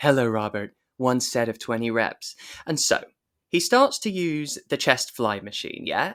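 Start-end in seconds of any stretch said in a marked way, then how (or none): 0.0-2.4 put-on sultry, sexy woman's voice. Retelling a story where a gym machine greets a man, in a sexy woman's voice. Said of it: "in a sexy woman's voice".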